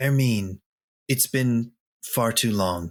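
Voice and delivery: tender, gentle character voice. A player speaking as Ebby to another character, in Ebby's tender voice. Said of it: "in a tender voice".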